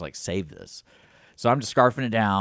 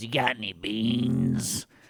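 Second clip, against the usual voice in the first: very slow, dragged-out, drawn-out put-on woman's voice; 4 dB quieter than usual. Retelling what a woman perched on the ledge above him said: imitating her voice. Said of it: "she has like that that voice".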